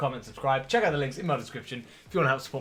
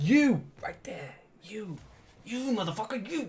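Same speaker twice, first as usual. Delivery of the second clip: aggressive, direct, pitched-up tone; 8 semitones higher than usual. Speaker addresses the audience directly, getting too aggressive. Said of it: "I'm getting a bit too aggressive now".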